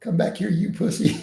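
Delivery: shrill, very high-pitched, taunting screaming. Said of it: "be throwing stuff and screaming".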